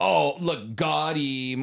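mocking, put-on edgy anime dub delivery. Quoting lines from an English anime dub, imitating an edgy dub line. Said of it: "they try to be, like, edgy".

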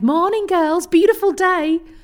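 bad put-on Scouse accent. Quoting a Scouser's greeting on a beach walk, bad Scouse accent. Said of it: "Apologies to Scousers for that accent, dreadful".

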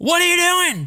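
very high, loud shouted yell. Retelling how a guy on the golf green yelled at them, retelling a yell. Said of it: "the guy just yells at us he goes".

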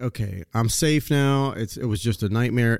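ordinary delivery

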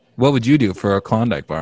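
ordinary talk

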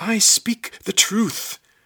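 shrill, booming, very loud, high, drawn-out shout. The bound lizard struggles while all eyes are on him, shouting. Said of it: "shouted Lizard".

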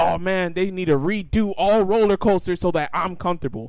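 ordinary talk

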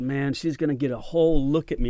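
ordinary talk

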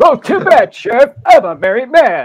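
very high, very loud, shrill toy voice, slowly swooping. Quick impression of a line, in a Mr. Potato Head voice. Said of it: "that's my impression of Mr. Potato Head".

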